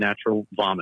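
ordinary delivery

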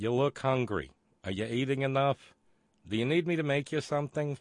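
Yiddish-inflected English accent.

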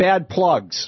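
very loud, high-pitched call-out. Retelling what a woman said to them in front of about twenty people, very loud voice. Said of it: "says to me in a very loud voice".

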